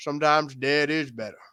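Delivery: put-on old man voice. Talking about a film, the speaker quotes the old guy: Pet Sematary old man impression. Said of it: "the old guy who talks like this".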